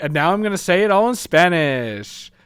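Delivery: woman's comical, quirky, funny speech rhythm. Describing a woman the speaker tried to film, imitating her funny cadence. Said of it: "She had a really funny cadence".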